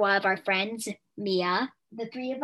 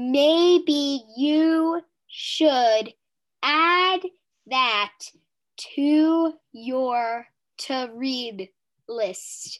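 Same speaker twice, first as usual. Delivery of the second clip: talking deliberately, much slower pace; 4 semitones higher, 5 dB louder than usual. Speaking to someone who remarks on the pace, talking slowly on purpose. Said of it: "I'm only talking slow".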